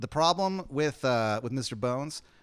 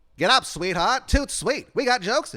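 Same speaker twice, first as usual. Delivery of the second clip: put-on old-timey 1920s voice, higher and louder; 10 semitones higher, 6 dB louder than usual. Playing an old manager waking someone on tour: imitating a 1920s-style talker. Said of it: "He kinda talks like a nineteen twenties guy".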